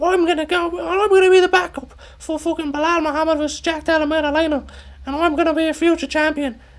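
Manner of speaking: very high-pitched, mocking voice. The speaker imitates a fighter after a fight; mocking high-pitched voice. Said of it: "make my voice this high pitched".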